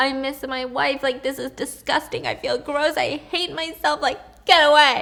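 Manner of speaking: acted-out crying through the words. Acting out an imagined cheating man breaking down: mock crying. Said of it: "he just started busting out crying".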